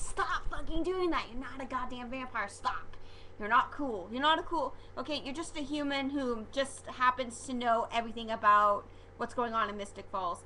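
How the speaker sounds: plain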